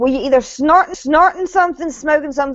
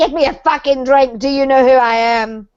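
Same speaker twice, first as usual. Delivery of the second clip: mock aggressive, drunk-sounding voice. Retelling how a woman acted at a bar, imitating her aggressive drinking voice. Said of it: "the aggressive drinking voice".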